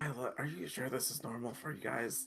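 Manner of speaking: whispering in character. Voicing a character on a walk, speaking to Isla: whispering in character. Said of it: "he does whisper to Isla".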